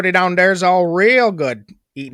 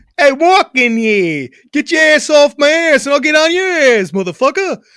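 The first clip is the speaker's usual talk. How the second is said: loud, pitched-up put-on New York accent; 8 semitones higher, 5 dB louder than usual. Asked for a New York accent, trying one out, New York accent. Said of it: "a New York accent".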